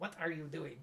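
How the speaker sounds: little, soft, cartoonish French accent. Retelling a scene from the VeggieTales movie, the peas asking a question in their French accent. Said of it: "in their French accent".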